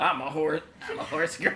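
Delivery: laughing, giggling, breaking into laughter mid-line.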